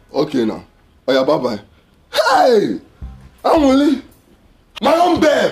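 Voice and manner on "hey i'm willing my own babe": worked-up, excited, hollered exclamation. In a scene, a character shouts and is then told to calm down. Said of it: "calm down".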